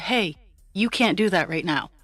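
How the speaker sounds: mock big girl voice, firm and direct. Recalling what she told him to make him stop, in her big girl voice. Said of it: "in my big girl voice".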